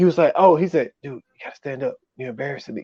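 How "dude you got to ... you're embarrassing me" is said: muttered under breath, whispering, quieter. Retelling what a character whispered to another: imitating someone whispering under breath. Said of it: "he whispers some shit under his breath".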